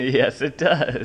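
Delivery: light chuckling laugh. A dad talking about an elevator, chuckling. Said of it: "(Dad chuckles)".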